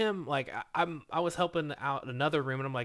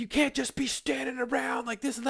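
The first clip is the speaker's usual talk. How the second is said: very high-pitched, shrill, berating screaming scold; 11 semitones higher than usual. Retelling being screamed at while waiting for pallets to wrap: imitating someone screaming. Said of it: "she starts screaming at me".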